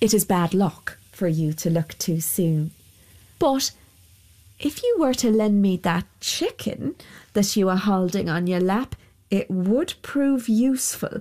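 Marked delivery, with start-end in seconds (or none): none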